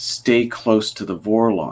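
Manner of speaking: mock grave, weighty, slow, serious tone. Speaker recounting a character's parting message to another character, retelling in a serious tone. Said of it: "in a serious tone".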